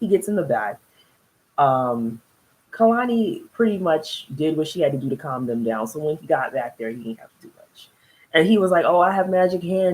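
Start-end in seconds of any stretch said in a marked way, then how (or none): 8.8-10.0 imitated sarcastic tone. Retelling what he said in the back seat: imitating a sarcastic remark. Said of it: "He's being sarcastic".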